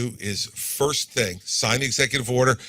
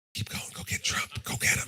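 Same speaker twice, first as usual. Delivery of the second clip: very soft, secretive whisper under the breath. Recalling a woman who grabbed him in Nashua, retelling a whisper. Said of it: "she whispered to me".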